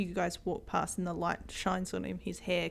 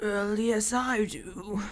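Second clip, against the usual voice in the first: put-on croaking, croaky, aged old man voice; 2 semitones higher than usual. The narrator voices an unseen figure answering the players in the dark: croaky old man voice. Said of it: "you hear a like croaky voice".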